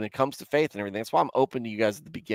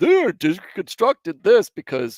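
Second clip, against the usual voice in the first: mock high, slow, sermon-like mocking voice. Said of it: "somebody like New Evangelicals is on there going".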